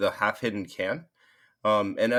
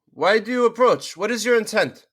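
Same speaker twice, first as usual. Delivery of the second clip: loud, high, challenging yell; 12 semitones higher, 8 dB louder than usual. Voicing a Dragonborn guard who challenges approaching riders: Dragonborn yelling. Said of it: "the Dragonborn looks you all over and yells".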